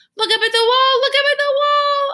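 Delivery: very high, loud, squeaky hamster-like peeps. A caged hamster tries to get a man's attention at the projector; squeaky hamster voice. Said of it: "I squeaked".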